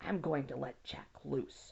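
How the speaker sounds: whispering hoarsely. Reading a scared child's line aloud: hoarse whisper. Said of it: "Laura whispered hoarsely".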